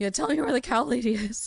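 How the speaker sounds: high voice cracking and breaking mid-line. Acting out a badly rolled intimidation attempt: voice cracking. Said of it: "your voice cracks".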